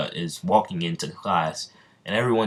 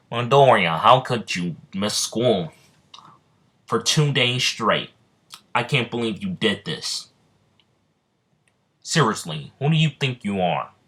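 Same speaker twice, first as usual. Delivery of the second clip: weird, strange scolding teacher voice; 3 semitones higher than usual. Telling a story, speaker voices Mister Aizawa speaking to Midori: weird voice. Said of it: "I'll give him um, a new weird voice".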